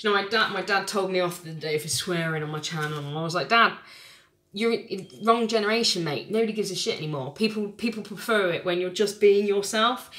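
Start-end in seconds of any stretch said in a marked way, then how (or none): none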